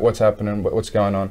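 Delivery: ordinary talk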